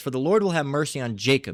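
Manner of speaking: usual speaking voice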